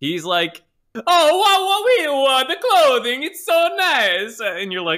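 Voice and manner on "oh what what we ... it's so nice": very high, shrill, loud fake cartoon Italian accent. Retelling an actor's performance in a movie: imitating Jared Leto's over-the-top Italian accent. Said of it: "he thinks he's doing a live action Mario".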